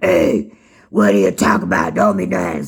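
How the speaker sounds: put-on raspy, odd, low, rough, creaky old man voice. Retelling being woken by his grandfather talking, imitating grandfather's weird voice. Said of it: "So he had like a weird voice".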